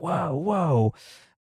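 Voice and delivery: put-on soothing voice as if calming an animal. Retelling a scene where one character stops another, mimicking Crocodile Hunter calming an animal. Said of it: "like the crocodile hunter with like a calming down an animal".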